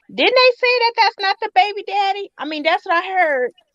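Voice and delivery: innocent, high-pitched tone. Mocking how Kandi spreads gossip as a question: imitating Kandi asking innocently. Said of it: "try to do it like it's like a question".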